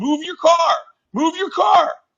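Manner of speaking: very high, shrill, insistent yelling. Recounting leaning out a car window at honking drivers, retelling a yell. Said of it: "I'm yelling".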